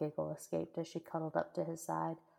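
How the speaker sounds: ordinary delivery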